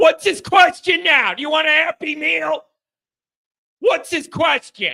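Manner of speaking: high, all-out ranting yell. Asking Sly what Ronald's question is now, yelling. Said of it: "I'm not yelling at you".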